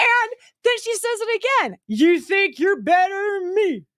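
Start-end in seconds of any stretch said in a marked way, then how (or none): 1.9-3.8 slurred, words smeared together, accusing tone. Retelling what a woman said to the speaker; imitating a woman slurring. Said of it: "Like that".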